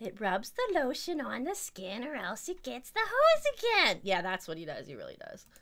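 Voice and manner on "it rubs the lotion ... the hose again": eerie, sinister, creepy voice, slow, drawn-out, swooping. Imitating how the speaker's husband quotes a film line; put-on creepy voice. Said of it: "he says it in a creepy voice".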